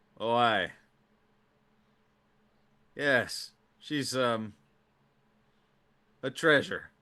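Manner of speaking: dry, sarcastic tone with the cheerfulness dropped. Voicing a man in a game scene praising someone: sarcastic, cheerfulness gone. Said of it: "the cheerfulness kinda drops".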